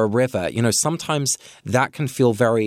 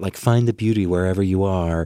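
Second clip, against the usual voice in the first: pat, glib, put-on American accent; 3 semitones lower than usual. Mocking a pat-sounding phrase, the speaker slips into an American accent. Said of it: "that was an American accent".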